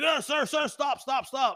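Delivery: loud, urgent, high-pitched yell.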